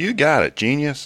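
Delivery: very high pitch, loud. Trying the impression once more after being told it sounded Southern, a Bender voice attempt. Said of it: "Let's see".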